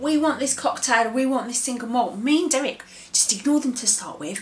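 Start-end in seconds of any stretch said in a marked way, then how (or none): 0.0-2.2 put-on clamouring shouts, like shouting ghosts. Retelling what ghosts crowded round the bar shouted: imitating ghosts shouting. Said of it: "shouting out".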